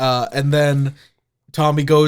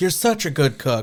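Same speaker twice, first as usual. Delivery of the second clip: plain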